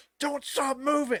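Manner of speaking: put-on yelling. Retelling a worker on a ride yelling at riders: imitating someone yelling. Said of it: "yelling at us".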